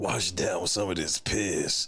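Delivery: very low, put-on bass voice, rising. Describing someone who jokes, then repeats it seriously, the speaker does a deep voice. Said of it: "you say it with a deep voice".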